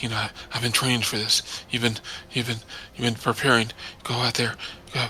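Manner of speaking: whispering slowly to himself, quiet. Voicing a character talking to himself before charging out: whispering slowly to himself. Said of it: "kinda whispering to him, s-, talking slowly to himself".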